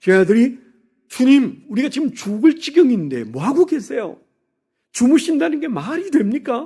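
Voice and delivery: put-on protesting complaint. A preacher acts out the disciples' words to Jesus, imitating a protesting complaint. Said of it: "그렇게 항의하듯 말하고 있는 제자들을".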